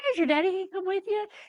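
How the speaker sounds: high, breezy, nonchalant tone.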